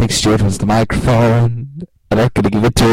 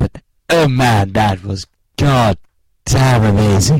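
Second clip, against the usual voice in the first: put-on posh cartoon baby voice, very slow, drawn out; 3 semitones lower than usual. Asked for an opinion on Sherlock and Doctor Who, answer with a Stewie Griffin impression. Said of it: "this is my Stewie Griffin impression".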